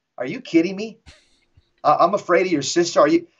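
ordinary delivery

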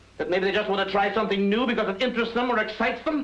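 shouting. In an argument, [name] challenges the other's certainty about people, shouting. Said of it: "You're shouting".

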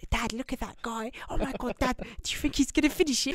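hushed, high-pitched whisper. Retelling a family whispering about a man downing water: imitating someone whispering. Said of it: "whispering on the".

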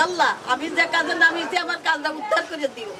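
usual speaking voice

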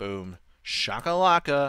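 very strange, oddly rhythmic cadence. Testing whether a hammer crushes ore into copper plate: strange cadence. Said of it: "That was a very strange cadence".

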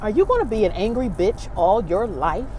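mock serious, stern, probing, inquisitive tone. Recounting what the man she married asked her, retelling it sternly and inquisitively. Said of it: "in a very inquisitive, stern way".

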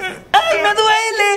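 high, crying pain wail.

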